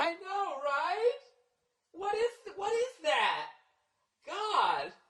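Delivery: very high whiny moan. Mocking female friends complaining together at a wine bar: imitating women whining.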